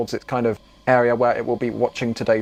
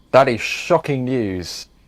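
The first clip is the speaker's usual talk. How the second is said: ordinary delivery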